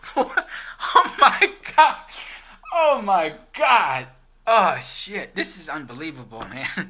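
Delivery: laughing while talking. Reacting to own joke about Kodak: laughing uncontrollably while talking. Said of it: "I'm losing it here at this table".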